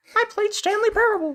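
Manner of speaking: very high-pitched cartoon mouse voice. Playing a mom who is Mickey Mouse, greeting a child: Mickey Mouse voice. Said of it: "my mother is actually Mickey Mouse".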